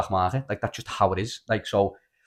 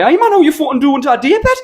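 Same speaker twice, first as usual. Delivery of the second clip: put-on Irish, Scottish, Geordie accents shifting, shrill and very loud; 11 dB louder than usual. Retelling greeting a guy while pulling out different accents, shifting irish, scottish, geordie accents. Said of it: "why have you went from Irish to Scottish to Geordie?".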